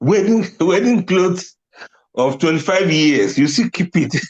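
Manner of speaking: high voice, laughing through the words. Talking about people who keep old wedding clothes, laughing while talking. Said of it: "so that I can laugh very well".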